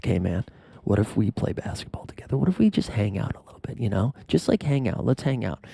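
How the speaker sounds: soft, hushed whisper spoken to the side. Retelling what Trae Young whispered to another player: imitating Trae Young whispering. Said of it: "he was whispering to Scotty Barnes".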